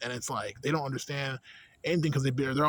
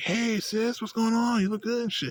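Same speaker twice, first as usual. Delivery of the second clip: overexcited, friendly, high-pitched, hyper voice; 9 semitones higher, 3 dB louder than usual. Retelling how they greet their sister: imitating own hyper greeting. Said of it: "I hit her with the hyper".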